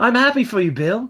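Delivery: put-on high, loud British accent. Retelling a movie scene, speaking as Pip to Bill; Pip's British accent. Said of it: "Pip definitely has a British accent".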